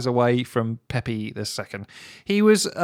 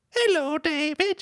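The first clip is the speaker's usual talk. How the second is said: put-on high-pitched old man voice, higher; 12 semitones higher, 4 dB quieter than usual. Acting out an old man greeting david: very high old man voice. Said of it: "he's got a, a very high voice 'cause he's very old".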